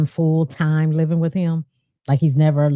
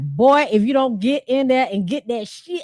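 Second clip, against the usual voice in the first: stern, strict scolding tone, pitched up; 8 semitones higher than usual. Imitating how a dad might order his son: stern father. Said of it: "his dad might be like".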